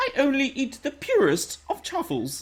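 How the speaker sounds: very high, swooping, la-di-da posh voice. Doing a requested line in a posh prawn voice. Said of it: "in a posh fish prawn voice".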